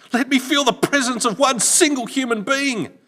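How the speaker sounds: very high, very loud, shrill howling cry. Narrator reading a man groping blindly in the darkness who calls out again, howled. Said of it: "he howled again".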